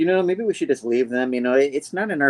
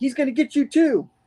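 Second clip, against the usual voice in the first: acted very high, panicky little boy voice; 13 semitones higher than usual. Retelling what a little boy said about the Scribble Man, imitating him freaking out. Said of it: "so the little boy is like freaking out".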